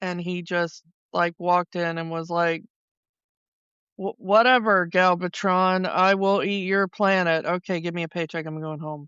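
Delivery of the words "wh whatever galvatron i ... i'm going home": put-on bored voice. Mocking how a voice actor read his lines: imitating Orson Welles phoning it in. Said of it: "he was phoning it in".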